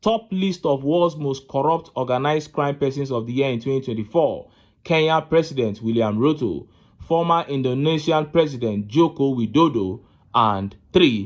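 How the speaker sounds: usual speaking voice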